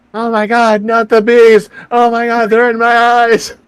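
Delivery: very high, very loud, frantic, panicked shriek. Describing how someone screamed by acting it out, imitating Nicolas Cage screaming. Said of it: "so he was screaming like Nicolas Cage".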